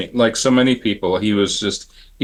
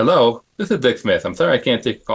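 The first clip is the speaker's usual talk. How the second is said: slightly lisping character voice; 2 semitones higher than usual. Retelling a call to an answering machine: Dick Smith impression with a lisp. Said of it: "Dick Smith talked like this".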